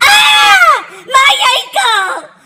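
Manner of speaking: screaming in pain.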